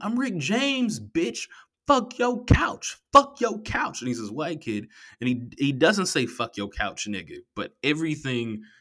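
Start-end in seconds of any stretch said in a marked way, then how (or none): 0.0-4.0 mock child's rowdy, squealing shout, very high. Retelling a boy on the bus, imitating a kid yelling. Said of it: "he's just yelling".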